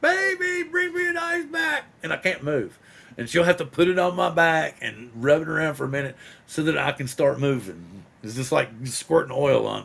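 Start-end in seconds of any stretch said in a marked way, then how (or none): 0.0-1.8 acted, shrill, very high, pitched-up scream. Retelling calling out for an ice pack while frozen: imitating own screaming. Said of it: "I'll be screaming".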